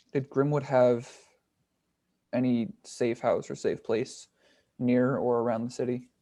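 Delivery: quiet, hushed voice. Asking a character about a safe house, in a hushed tone. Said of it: "in a hushed tone".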